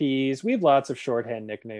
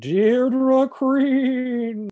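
very high put-on voice, one word stretched out; 10 semitones higher, 4 dB louder than usual. Introducing this week's guest host in Pardo voice. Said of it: "let me do this in Pardo voice".

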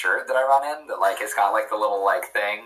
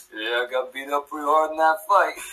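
put-on boxer voice, pitched higher; 4 semitones higher than usual. Saying he dresses like Rocky and doing the character: Rocky voice. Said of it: "I am Rocky".

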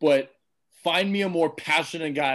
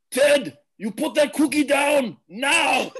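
very high-pitched, very slow, drawn-out delivery; 11 semitones higher, 4 dB louder than usual. Doing a movie line when asked for a best impression: Arnold Schwarzenegger impression. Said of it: "you gotta give us your best Schwarzenegger".

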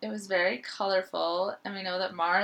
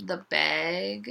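word "bag" said with Minnesotan accent; 2 semitones lower than usual. Naming the standout piece for Mara, with a Minnesotan accent. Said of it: "I just sounded really Minnesotan when I said that".

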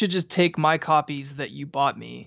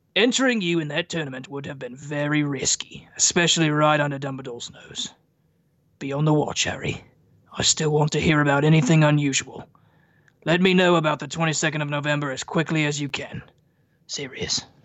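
put-on Australian accent. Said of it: "not quite as Australian as your rendition".

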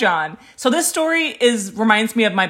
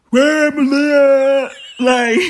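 loud caveman voice with drawn-out "hey"; 4 semitones higher, 5 dB louder than usual. Showing how they sound when not paying attention: caveman voice. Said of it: "Just like some caveman".

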